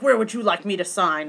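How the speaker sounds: normal talking voice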